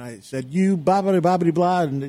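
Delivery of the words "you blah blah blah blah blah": screaming, higher-pitched. Recounting an argument with Scott after being bid up, the speaker replays their outburst: retelling own screaming. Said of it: "started screaming at him and yelling at him".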